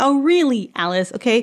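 irritated, fed-up, annoyed, heated tone. Reacting to a book character's claim about magic: angry. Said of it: "Somebody's angry over here".

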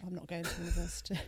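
ordinary delivery

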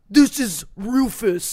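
large dog character voice. Asked to do a bigger dog: bigger dog voice. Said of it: "do a bigger dog".

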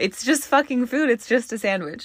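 saddened, upset tone. Reflecting on a past compliment and where things are now, sad. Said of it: "I don't know why this is making me so sad".

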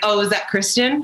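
ordinary talk, nothing marked

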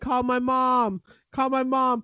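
play-acted very slow, high, drawn-out screaming man. Retelling how a man being arrested screamed: imitating a screaming man. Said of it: "He was screaming".

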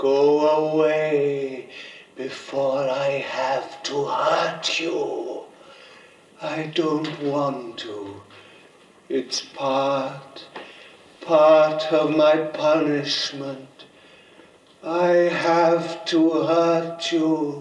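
very low, deep, ominous, menacing tone. Drama: a father tells his daughter to go away before he hurts her, menacing. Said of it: "There's menace in it now".

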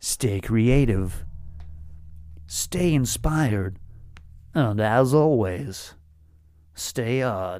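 slow, deliberate, each phrase drawn out slowly. Finishing the episode in the voice of Casey Kasem. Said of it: "in the voice of Casey Kasem".

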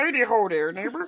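put-on frog puppet voice. Podcast host repeats the Home Improvement neighbor greeting in Kermit the Frog voice. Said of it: "Home Improvement, Kermit the Frog style".

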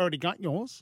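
put-on New Zealand accent. Retelling what a woman said about a present: New Zealand accent. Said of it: "That's my New Zealand accent impersonation".

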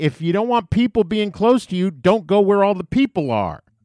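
play-acted angry shout. Retelling shouting back at a jogger who made them stop: retelling a shout. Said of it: "And I shouted at him".

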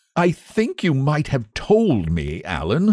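sulky, resentful grumbling. Huey complains to Alan for letting him make a fool of himself, sulkily. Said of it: "said Huey sulkily".

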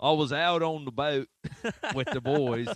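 put-on Australian accent. Reading out a quoted man's words in a put-on australian accent. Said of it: "I want to do like an Australian accent here".

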